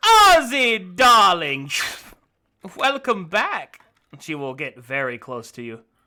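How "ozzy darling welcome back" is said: very loud, very high, swooping, slow and drawn-out. Voicing the brothel keeper greeting a returning player: Missus Court voice. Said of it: "She will turn slowly and she says".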